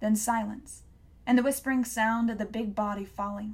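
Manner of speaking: ordinary delivery, nothing marked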